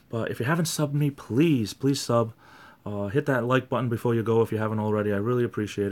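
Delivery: raspy, hoarse, soft-spoken voice. Asking viewers to subscribe and like before signing off: raspy, soft-spoken voice. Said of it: "so raspy that I'm starting to talk a little bit more soft".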